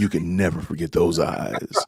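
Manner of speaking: low, hushed nineties cologne-commercial delivery. Repeating another person's line like an old nineties cologne commercial. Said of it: "Sound like an old cologne commercial from the nineties".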